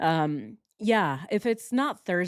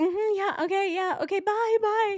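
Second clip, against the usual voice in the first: high-pitched voice. Retelling ending a therapy session to start a live stream: imitating own hurried goodbye. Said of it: "I'm always like".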